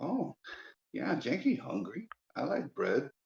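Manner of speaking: high, swooping cartoon goblin voice. Narrator voicing a goblin who has just lowered his weapon, goblin voice. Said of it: "and he's like".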